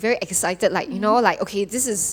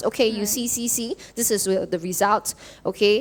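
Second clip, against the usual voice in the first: plain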